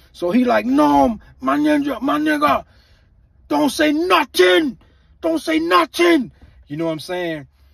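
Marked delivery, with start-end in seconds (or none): 0.7-6.3 put-on thick, strong, heavy Caribbean accent, slow and high. Retelling what an angry Luke said, Luke's heavy Caribbean accent. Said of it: "that Caribbean accent get real heavy and strong".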